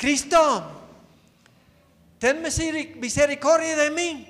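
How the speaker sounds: put-on beggar's voice, loud, high, pleading shout. Retelling a Bible story, voicing the beggar's cry: acting out a beggar shouting. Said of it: "el mendigo empieza a gritar".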